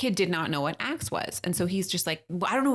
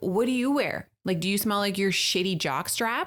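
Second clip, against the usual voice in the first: put-on angry, scornful, mocking tone. Speaker retells what they said to a twelve-year-old kid, retelling an angry retort. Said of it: "I was so pissed".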